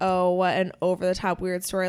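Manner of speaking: plain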